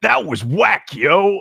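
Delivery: high, nineties-style dude slang voice. Asked to do their best nineties voice, the speaker answers in nineties slang. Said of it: "do your best nineties voice".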